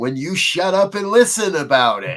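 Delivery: mock booming voice. Retelling a still small voice answering his complaint, imitating a booming voice. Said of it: "in a rather booming voice".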